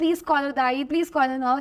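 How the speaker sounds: ordinary talk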